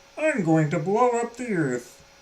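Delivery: high-pitched cartoon alien character voice. Retrying after a terrible first attempt, speaker does a Marvin the Martian impression. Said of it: "Is that a better one?".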